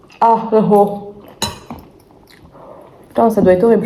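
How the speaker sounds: talking with mouth full. Talking about her meal while eating it, talking with mouth full. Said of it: "je parle à la bouche pleine".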